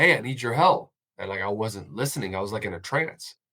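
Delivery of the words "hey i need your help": put-on urgent, raised yell. Recalling a first call with a dead man, retelling the driver yelling at them. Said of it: "the driver yelling at me like".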